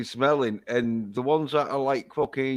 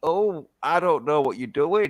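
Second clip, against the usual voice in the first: naive, feigned innocent tone. Imitating women who pretend not to know about sex: imitating feigned innocence. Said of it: "Women like to pretend that they've never had sex before".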